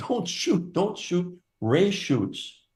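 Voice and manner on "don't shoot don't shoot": very high, shrill, alarmed squealing cry. Retelling a hunting trip where hunters panicked: imitating people screaming. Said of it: "they're all screaming".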